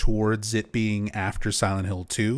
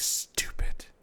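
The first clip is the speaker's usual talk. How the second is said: put-on muttering under breath, quieter. Retelling how Eileen walks off camera after dropping groceries, imitating Eileen muttering under her breath. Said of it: "the little muttering under her breath".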